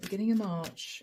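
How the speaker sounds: ordinary delivery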